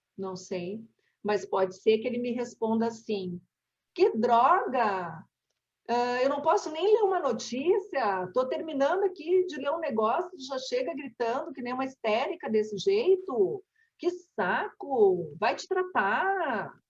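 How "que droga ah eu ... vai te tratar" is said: plain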